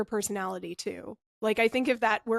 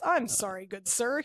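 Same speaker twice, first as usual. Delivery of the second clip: put-on stiff, forced, unwilling-sounding delivery. Retelling a movie character's apology: imitating a forced apology. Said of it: "It was a very forced".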